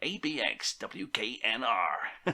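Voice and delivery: letters spelled out in a put-on American accent. Narrating a radio history, announcing the station's call letters: put-on American voice. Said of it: "I'm going to put my American voice now".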